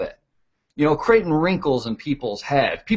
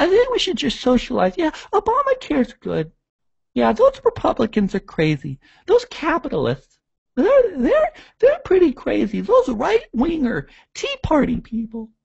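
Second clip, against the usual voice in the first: very high, scornful, parodied caricature voice; 12 semitones higher than usual. Imitating how liberals talk: mocking impression of liberals. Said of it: "they always talk like this".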